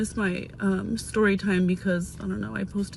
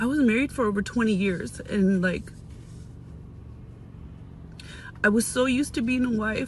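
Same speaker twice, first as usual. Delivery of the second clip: tearful voice, crying while talking; 2 semitones higher than usual. Talking about being married over twenty years, crying while talking. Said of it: "and you're crying".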